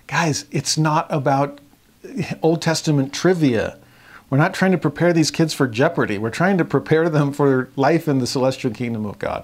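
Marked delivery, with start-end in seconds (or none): none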